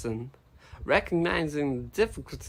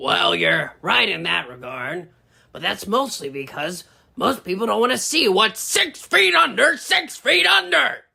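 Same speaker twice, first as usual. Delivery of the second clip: very high, raspy, rough shouting; 6 semitones higher, 7 dB louder than usual. Talking with a companion who carries the recording equipment, yelling. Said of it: "you don't have to yell at me".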